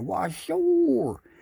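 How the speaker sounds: very high underwater fish voice, words drawn out. Telling a fishing joke, the speaker voices the old fish answering: underwater fish voice. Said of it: "I was trying to do fish underwater".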